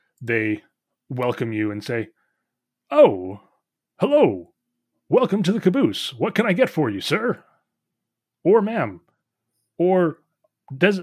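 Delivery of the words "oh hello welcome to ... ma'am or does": automaton character voice, higher and louder. Voicing a many-armed automaton bartender welcoming a guest: Warforged bartender voice. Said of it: "a many-armed automaton, this Warforged bartender".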